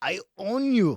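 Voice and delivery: very high, very loud, shrill, bad German accent. Retelling what they said to the nearest penguin, in a poor German accent. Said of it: "That was a poor German accent".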